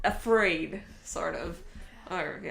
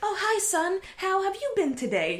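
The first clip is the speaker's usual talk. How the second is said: creepy, very high, sing-song fifties housewife voice; 10 semitones higher, 4 dB louder than usual. Retelling a dinner table scene from a film: creepy American housewife voice. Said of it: "this sort of creepy American housewife".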